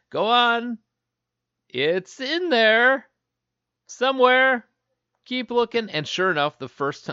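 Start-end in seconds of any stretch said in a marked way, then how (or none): 0.1-5.9 very high, loud, very slow, drawn-out call. Retelling how kids were urged to keep searching, imitating Mark Summers' tone. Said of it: "you can hear the tone in Mark Summers' voice".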